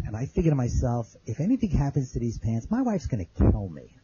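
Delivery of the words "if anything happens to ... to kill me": normal talking voice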